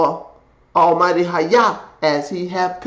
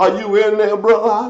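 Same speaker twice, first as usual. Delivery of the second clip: mock sorrowful, mournful, lamenting call; 3 semitones higher than usual. Acting out a call into the lions' den, asking if someone is there: lamenting voice. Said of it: "with a lamenting voice".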